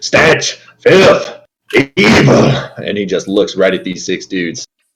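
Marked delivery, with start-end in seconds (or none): 0.0-2.5 put-on man voice, pitched up, shouting. A player voices the mole Mal shouting at six dudes in a bar: Mal's man voice, shouting. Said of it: "you hear this mole shout that".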